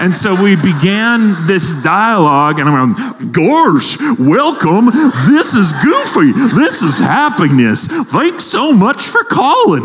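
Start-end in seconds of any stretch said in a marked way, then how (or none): 3.3-9.8 poor cartoon voice, high, swooping and sing-song. Retelling answering a phone call in a poor Goofy imitation. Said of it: "a really poor imitation of, of Goofy".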